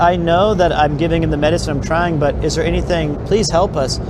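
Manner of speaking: normal talking voice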